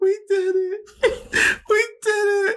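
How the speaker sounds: put-on very high sobbing through tears. Retelling a partner's words after the birth: imitating someone crying. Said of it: "Nicole's, like, crying".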